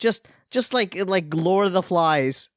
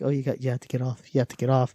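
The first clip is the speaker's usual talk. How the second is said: gentle, soft-spoken, low, quiet dad voice; 6 semitones lower, 4 dB quieter than usual. Recalling a girl's dad telling her to move, imitating a quiet soft-spoken dad. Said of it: "being very quiet and soft spoken".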